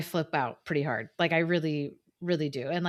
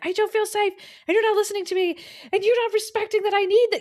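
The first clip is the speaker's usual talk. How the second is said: shrill, very high, loud cry-screamed outburst; 6 dB louder than usual. Retelling a past freakout at a partner: imitating own past yelling. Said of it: "I've had freakouts where I'm just, like, yelling".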